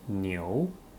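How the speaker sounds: rising second tone, pitch climbing through niu. Chinese lesson, reading after the teacher: rising second tone on niu. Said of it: "second tone goes up".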